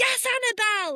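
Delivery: acted high, loud, excited scream at full volume. Retelling cheering at an awards show: retelling own screaming. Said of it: "Like, screaming it".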